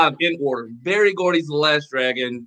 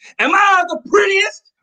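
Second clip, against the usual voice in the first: put-on scream, very high, shrill, full-throated; 4 dB louder than usual. Retelling a Halloween costume contest: screaming as Sho'nuff. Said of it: "so when I just started screaming".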